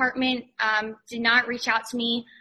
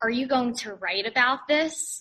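usual speaking voice

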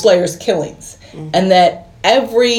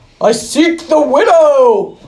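booming, loud, high put-on yell, "widow" stretched; 5 semitones higher than usual. Retelling a scene where he enters a webbed cave, loud put-on voice. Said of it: "Do you have to say it in that voice? Because it's loud. You're yelling at me".

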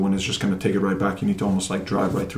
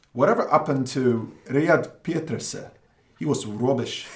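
high-pitched put-on South African accent; 5 semitones higher than usual. Responding to a request for an accent, South African accent. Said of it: "your best South African accent".

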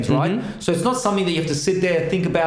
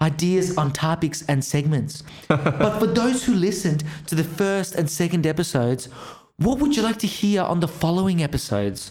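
put-on spoken in an American accent. Reading out a co-host's poll post, imitating Ours. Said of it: "me doing my best impersonation of what ours sounds like".

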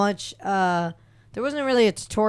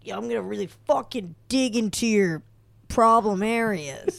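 Florida bro dude voice. Imagining what a male masseur would say during a massage: bro masseur dude voice. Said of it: "Is that your voice?".

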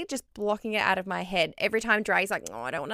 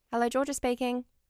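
polite phone-answering voice; 3 semitones higher, 4 dB quieter than usual. Asked by a friend to do her phone voice, phone voice. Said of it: "Do your phone voice".

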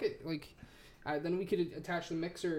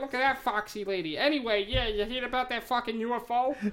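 dopey cartoon dad voice, loud and pitched up; 7 semitones higher, 7 dB louder than usual. Riffing in a put-on voice that a listener mocks, Peter Griffin-like voice.

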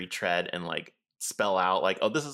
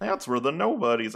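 put-on cartoon dog voice, higher; 6 semitones higher, 4 dB louder than usual. Describing a game character dropping lore: attempted Goofy voice. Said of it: "I can't do a Goofy voice".

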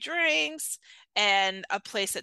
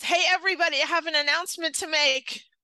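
mock child voice, big, booming, loud, high; 6 semitones higher, 3 dB louder than usual. Retelling a six- or seven-year-old girl's announcement to everyone, imitating a child announcing loudly. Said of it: "like really loud".

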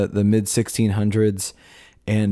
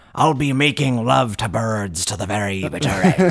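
put-on swashbuckling pirate voice. Joking in conversation after discussing a phrase's meaning, in a pirate voice. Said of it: "Thank you for using that in the pirate voice".

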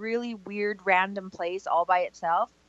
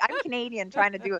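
ordinary delivery

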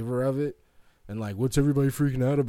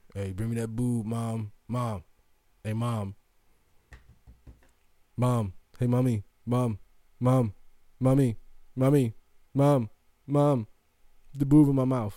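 mock disgusting, demanding child voice, slower. Acting out a boy calling for his mom, imitating a gross demanding boy. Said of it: "the way I say it is disgusting".

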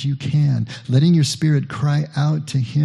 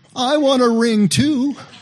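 put-on piercing, very loud, shrill, high-pitched little-girl shout; 10 semitones higher than usual. Speaker recalls a little girl interrupting the ring exchange at a ceremony: retelling a very loud shout. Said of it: "in the loudest voice that you can imagine".

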